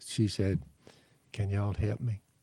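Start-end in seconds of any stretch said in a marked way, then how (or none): 1.3-2.2 humble, shy, meek and timid. Retelling a woman's first words after she sits down, imitating a meek voice. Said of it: "in a meek voice".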